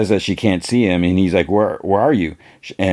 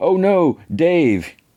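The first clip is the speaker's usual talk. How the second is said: badly faked sorrow, very high pitch; 10 semitones higher than usual. Retelling a scene where a character fakes sorrow over a body: imitating fake grief. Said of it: "he fakes it too".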